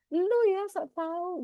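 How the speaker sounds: high, slow, snapping angry voice.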